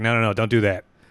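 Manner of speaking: ordinary delivery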